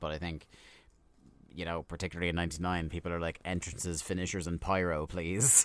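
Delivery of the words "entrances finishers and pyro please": ordinary talk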